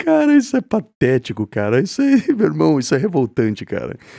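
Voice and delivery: speaking while laughing nervously through the words. Reacting to what was just said, laughing nervously while talking. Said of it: "Eu tô rindo assim de nervoso".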